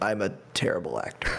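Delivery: barely-there, very quiet, hushed leaned-in murmur. Retelling what an actor leaned across a table to say: imitating someone speaking very quietly. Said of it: "leans across the table and very quietly says".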